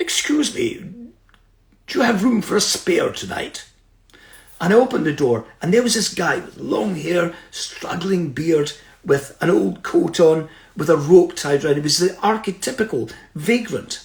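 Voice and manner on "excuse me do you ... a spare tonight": very posh, refined upper-class voice. Retelling what a visitor said after knocking on the door: very posh voice. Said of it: "this very posh voice said".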